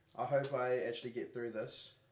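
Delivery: ordinary delivery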